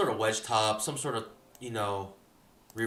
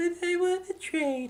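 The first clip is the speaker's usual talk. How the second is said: put-on very high girly voice. Repeating a trading line and asking if it's convincing: girl voice. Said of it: "Do you like my girl voice?".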